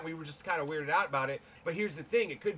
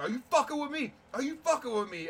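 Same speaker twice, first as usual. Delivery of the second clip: furious, high-pitched screaming; 8 semitones higher than usual. Retelling the brother coming out of the shower at the sister, retelling a scream. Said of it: "starts screaming at my sister".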